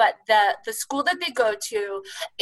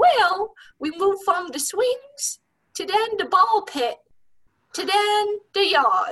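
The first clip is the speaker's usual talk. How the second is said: put-on high voice of a seven-year-old boy; 10 semitones higher than usual. A parent retells how their seven-year-old son explained it: imitating a young child's voice. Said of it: "He talks like this".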